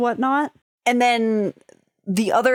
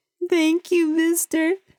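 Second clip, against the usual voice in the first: put-on weepy, tearful, high little-girl voice; 6 semitones higher than usual. Voicing a little girl thanking a stranger through tears: crying little girl voice. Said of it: "tears are streaking down her face ... crying".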